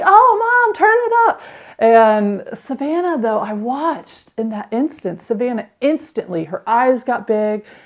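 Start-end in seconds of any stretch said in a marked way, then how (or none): 0.0-1.4 very high excited squeal, like a little foal. Mother retelling how her child reacted to her playlist: imitating Willow's excited squeal. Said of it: "Willow like squealed like a little baby foal".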